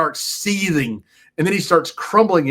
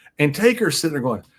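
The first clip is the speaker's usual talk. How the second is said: usual speaking voice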